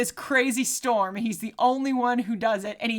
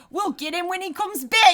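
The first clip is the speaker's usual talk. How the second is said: put-on high-pitched accent, Australian sliding into New Zealand; 8 semitones higher, 3 dB louder than usual. Retelling what the cops say in a movie: New Zealand-sounding accent. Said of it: "that was more of a New Zealand".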